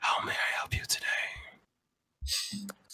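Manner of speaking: drawn-out, very hushed, deep, slow, menacing whisper. Voicing a thing inside a character's head: deep sinister voice. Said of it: "the thing in his head responds".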